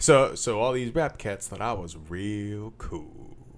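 affected, put-on, self-conscious narrator voice. Imitating how he reads a line: Morgan Freeman-style narrator voice. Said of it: "He's trying to get like I want to say Morgan Freeman, Montel Williams vibe going. So when he'll get in there and he'll be like".

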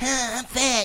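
very high, squeaky, animated cartoon schoolkid voice. Speaker describes someone who does the Cartman voice and imitates the Cartman voice. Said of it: "he does the Cartman voice".

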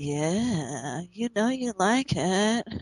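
creepy, smarmy villain voice, slow drawl, stretched "yeah". Describing a creepy villain's manner to the others: smarmy Overlord voice. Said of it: "he's just so smarmy and just like".

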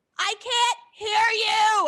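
mock very slow, high, loud, drawn-out screaming. Retelling a muffled phone call with a friend, retelling screaming at a friend. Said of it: "I'm screaming at my friend".

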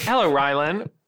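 normal talking voice

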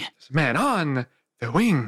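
swooping voice with wide pitch swings. Competing with another speaker: William Shatner impression. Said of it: "whoever had the better William Shatner".

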